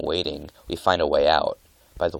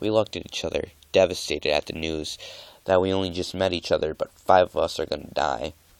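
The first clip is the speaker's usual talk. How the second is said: plain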